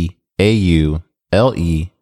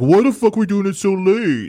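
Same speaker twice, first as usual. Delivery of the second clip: put-on complaining voice, higher. Retelling a complaint about recording so late, imitating Raul complaining. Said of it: "he was like".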